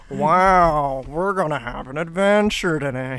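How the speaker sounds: very slow, deliberate put-on voice with long, stretched "wow". Joking about Baldi being a stim voice: Baldi voice. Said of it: "I'll just start talking like".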